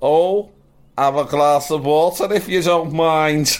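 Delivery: put-on high, drawn-out, la-di-da posh old lady voice. Retelling what a grandmother said when asked for water: imitating Scouse nan. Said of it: "My Scouse nan used to always say".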